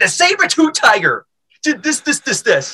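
high, loud yelling. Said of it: "I just yelled".

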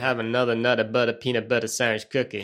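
put-on American accent. Repeating an old advert slogan the way the adverts said it: American accent. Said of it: "they'd say it in an American way".

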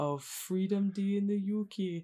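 dubious, attempted put-on Geordie accent. A host announces day three of Freedom Day, attempted Geordie accent. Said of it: "was that meant to be a Geordie accent?".

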